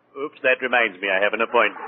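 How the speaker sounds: plain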